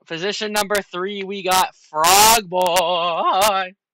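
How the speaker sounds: put-on very loud, deliberate voice crack, Boy drawn out. Host announcing race positions to the players: deliberate voice crack. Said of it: "I had to do the voice crack".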